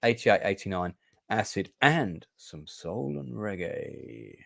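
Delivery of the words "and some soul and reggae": lower, quieter put-on sexy voice. Summing up the music lineup for Unity, finishing in a mock sexy voice. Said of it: "I did my sexy voice for that last bit".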